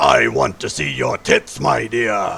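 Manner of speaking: sinister, very deep, rough villain growl. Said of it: "you hear this very deep voice come out of nowhere".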